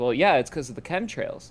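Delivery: ordinary delivery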